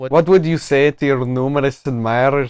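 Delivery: put-on Scottish accent. Retelling a man's video where he interviews himself, Scottish accent. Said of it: "his British accent becomes a Scottish accent".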